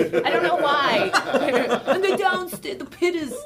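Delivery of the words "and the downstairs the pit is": put-on higher, very slow grandpa voice. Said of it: "so I do that voice too".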